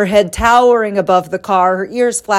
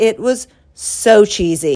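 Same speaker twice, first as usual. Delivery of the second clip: ordinary talk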